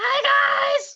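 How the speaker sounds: very high, shouted little kobold creature voice. A voice greets the listeners from the other end, in a kobold voice. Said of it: "It sounds like one of the kobolds".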